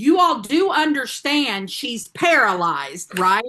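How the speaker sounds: huge, room-filling, booming giant voice. Retelling what Steven said to them in the waiting room, in his big booming voice. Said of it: "in his big, booming, giant body voice".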